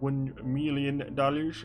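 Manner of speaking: put-on British accent tried on. Mid-roleplay, after failing at a British accent, Austin Powers voice. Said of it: "I got an Austin Powers voice going".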